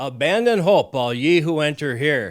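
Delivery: loud booming voice. Retelling a man announcing to a full establishment from a railing, in a loud voice. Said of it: "he says in a loud voice".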